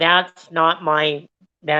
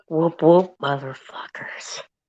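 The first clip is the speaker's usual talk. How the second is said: whispered speech; 4 dB quieter than usual. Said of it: "Whisper it".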